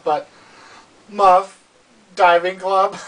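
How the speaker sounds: words squeezed past a held-in laugh. Speaker sharing trivia with an audience, trying not to laugh. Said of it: "I'm trying not to laugh".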